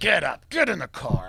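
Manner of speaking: put-on angry, mad tone. Retelling being woken by father for a jog: imitating angry father. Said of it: "gets me out of bed like he's mad".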